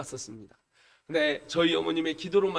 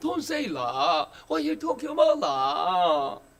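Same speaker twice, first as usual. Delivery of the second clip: put-on Chinese accent, very high-pitched; 11 semitones higher than usual. Speaker acts out a Chinese person coming to speak English, in Chinese-accented English. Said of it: "중국 사람이 찾아가 영어를 합니다".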